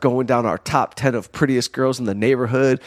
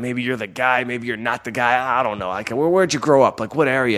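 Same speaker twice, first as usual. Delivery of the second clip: put-on growling voice. Retelling a phone call with Dan, imitating Dan's growling voice. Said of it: "He talks like he's growling all the time".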